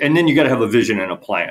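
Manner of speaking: ordinary delivery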